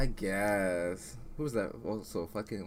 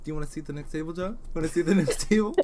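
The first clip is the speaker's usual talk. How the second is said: patronising, condescending, loud, high talking-down voice; 8 semitones higher, 7 dB louder than usual. Arguing with a co-host, she mimics a hypothetical manager: mocking a condescending manager. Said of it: "if my manager was like".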